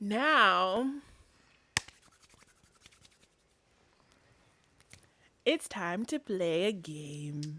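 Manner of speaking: very slow, eerie, low, hushed, "now" stretched. Announcing to a co-speaker that it's time to play a game, sounding creepy. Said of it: "that sounded creepy".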